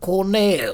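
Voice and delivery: speaking with a French accent. Trying out how the word colonel sounds, french accent on colonel. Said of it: "if I try to say it in a French accent".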